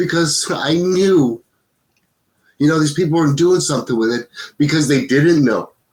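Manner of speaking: crying, tearful, choked up, pitched high. Speaker tells a listener why they created this, crying while speaking. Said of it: "I don't know why I'm so crying so much".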